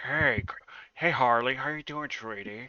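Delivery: put-on creepy, unsettling voice. Mocking how Jared Leto's Joker talks to Harley, doing a Jared Leto Joker impression. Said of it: "he sounds like some kind of Karen".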